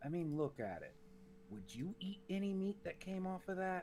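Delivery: soft, quiet, hushed voice. Player's character speaking aside to another character about a troll, speaking quietly. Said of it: "says quietly to".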